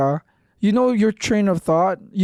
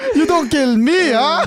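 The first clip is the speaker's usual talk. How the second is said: put-on broken English; 8 semitones higher, 4 dB louder than usual. Acting out a guy with a knife in a friend's nightmare, imitating broken english. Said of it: "broken English".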